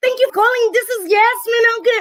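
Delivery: faked, high, feminine put-on phone voice. Recalling answering calls all day at work: retelling her faked work voice. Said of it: "all day I was at work like this".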